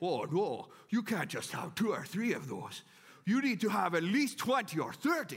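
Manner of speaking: put-on Low German accent. Voicing the little inner Mennonite in the speaker's head, in a Low German accent. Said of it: "My little inner Mennonite has a low German accent".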